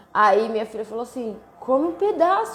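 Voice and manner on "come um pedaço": put-on half-angry, pitched-up, insistent tone. A mother retells what her daughter said to her, mock half-angry. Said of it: "meio brava comigo".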